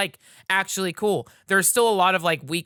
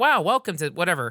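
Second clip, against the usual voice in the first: put-on AI robot girl voice. Mocking a game's guide character greeting the player: imitating V, an AI robot girl. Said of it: "V is this A I robot girl who's like".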